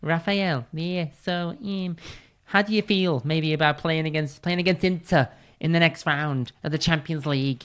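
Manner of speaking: put-on strong scouse accent. Retelling a TV interview, imitating the pundit Jamie Carragher: bad Jamie Carragher impression. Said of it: "He has a very strong Scouse, Scouse accent, even though I can't do it properly".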